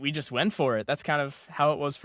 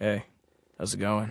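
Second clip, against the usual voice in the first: casual, low, deep-register voice; 5 semitones lower than usual. Recalling something tried on the second day, the speaker greets in a lower register. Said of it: "work with my lower register".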